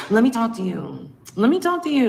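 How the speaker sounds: put-on insistent anger, high and swooping. Retelling how a woman talked during an argument, imitating an angry demand. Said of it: "kept switching up from like anger".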